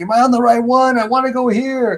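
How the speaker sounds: shrill, very high, loud yell. Retelling asking conductors at train stations: imitating own past yelling. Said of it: "yelling, like, to, to the conductors".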